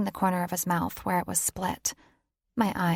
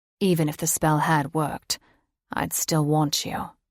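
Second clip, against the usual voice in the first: gruff, rough voice; 3 semitones lower, 4 dB louder than usual. Reading a character's reluctant confession aloud: gruff voice. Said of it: "his voice gruff".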